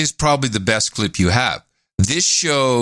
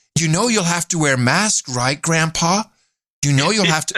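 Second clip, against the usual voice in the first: sickly-sweet, sugary, syrupy coaxing tone; 3 semitones higher than usual. Imitating the reporter talking sweetly to a grandfather: imitating sickly-sweet talk to an old man. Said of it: "She said".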